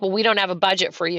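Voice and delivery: normal talking voice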